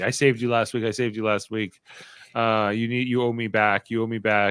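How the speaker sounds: put-on begging, pleading tone. Retelling a houseguest pleading with another player: imitating someone begging. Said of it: "begging him".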